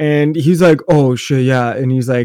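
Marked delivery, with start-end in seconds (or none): 0.9-1.7 dopey, dim-witted, idiot-sounding drawl. Retelling a friend's reply on the phone: imitating a friend sounding dumb. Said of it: "he sounds like an idiot".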